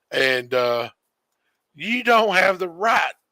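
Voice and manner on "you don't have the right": put-on elderly woman's indignant yelling, held back. Retelling a call from an old lady customer: imitating an old lady yelling. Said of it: "the thing she kept yelling".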